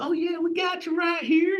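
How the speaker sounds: mock Oklahoma local accent. Retelling what the registration staff said at the conference: Tulsa impression. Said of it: "I'm doing my best Tulsa, uh, uh, impression".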